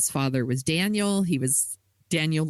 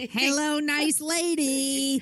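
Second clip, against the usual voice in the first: very high voice, word "lady" drawn out; 12 semitones higher than usual. Greeting the co-host as a joke: Jerry Lewis voice. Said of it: "that's my Jerry Lewis impression".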